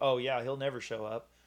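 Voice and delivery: ordinary talk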